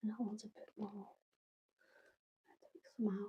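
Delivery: hushed half-whisper, barely audible. Talking the audience through adjusting amounts in a mix, half-whispering. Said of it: "I don't know why I'm whispering".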